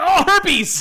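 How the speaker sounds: very high, very loud, shrill shriek. Recapping a fight scene where one character spits on another, Saul's scream. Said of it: "Saul screams like".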